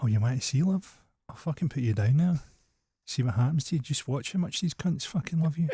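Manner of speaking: blunt, threatening, challenging tone. Retelling a joke exchange between God and Jesus: acting out God. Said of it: "And God has been like".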